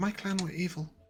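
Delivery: very quiet, hushed voice. Replying in character as Sastra: speaking very quietly. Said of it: "Sastra's gonna speak so quietly all the time".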